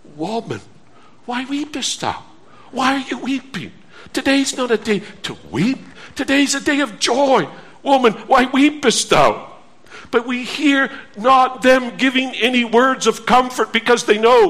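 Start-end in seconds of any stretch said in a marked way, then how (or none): 0.1-9.5 very gentle, tender tone. A preacher acts out what they ask the weeping woman; very gentle tone. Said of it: "Possibly with a very gentle tone".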